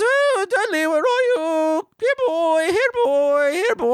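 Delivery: very high, slow, drawn-out put-on New Zealand accent. Retelling a horror story, the speaker calls for dudley in a mock new zealand accent. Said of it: "everybody in New Zealand talks like this".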